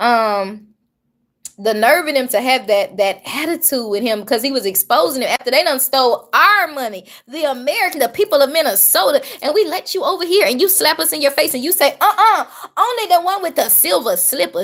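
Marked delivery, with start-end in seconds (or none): 12.0-14.6 dismissive, brushing-off, turning-away uh-uh. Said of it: "just like they did in The Wiz".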